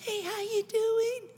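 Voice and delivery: barely audible, very high-pitched quiet voice. Showing an audience how quiet talkers greet people, very quiet talking. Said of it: "because they talk like this".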